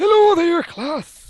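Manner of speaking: squeaky, very high, loud put-on dwarf voice. Opening a Let's Learn Tekkit video, trying a school teacher's voice: dwarf voice. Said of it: "No, that's dwarf".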